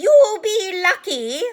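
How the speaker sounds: very shrill, very loud cackling voice. Narrator reads Peeves the poltergeist cutting in on Dumbledore: cackling Peeves voice. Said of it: "said a cackling voice".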